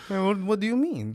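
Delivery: put-on French accent. Retelling what a man asked him: French accent. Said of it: "is that your French accent?".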